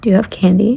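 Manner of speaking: ordinary talk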